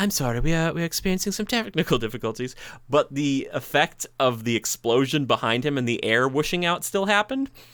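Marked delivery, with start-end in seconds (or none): 0.0-2.6 put-on British woman's accent, pitched higher. Retelling how another voice came out during his act, in a british lady voice. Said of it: "like a British lady voice".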